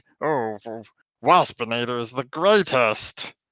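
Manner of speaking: ranty, monologue-style ranting voice. Retelling a character talking to himself in the air: imitating Waspinator's ranty monologue. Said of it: "he even is like".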